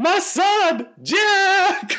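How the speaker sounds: very high, piercing, shrill, loud scream, drawn out. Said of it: "she just screams again".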